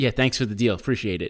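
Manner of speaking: ordinary talk, nothing marked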